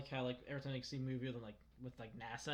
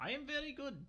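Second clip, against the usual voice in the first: very high, lousy, bad fake Russian accent; 13 semitones higher than usual. To the group, the speaker demonstrates a shitty russian accent. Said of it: "Dylan's shitty Russian accent".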